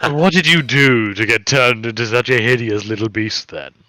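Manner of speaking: odd, strange purring character voice. In an acted scene, a character questions a transformed creature in a strange purr-like voice. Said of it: "in this strange kind of purr-like voice".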